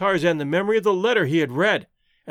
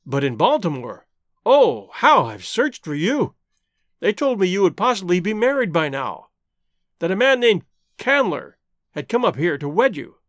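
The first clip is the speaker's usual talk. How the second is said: ordinary delivery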